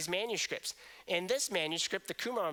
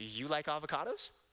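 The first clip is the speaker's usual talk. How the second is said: pitch climbs at the end of avocados; 3 semitones lower than usual. Marking a question by intonation alone, with rising question intonation. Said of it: "I signaled the question simply by intonation".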